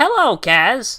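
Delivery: very high-pitched, loud voice. Praising a funny show character, then imitating him: horrible Neeku impression. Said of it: "That was a horrible impression".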